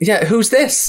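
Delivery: put-on high Scottish accent. Retelling a phone call where the person answering turns out Scottish: imitating Laura Fraser's Scottish accent. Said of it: "you're Scottish?".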